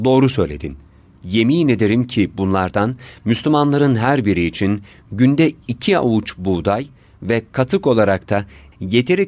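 ordinary delivery

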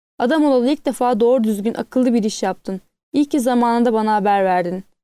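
ordinary delivery

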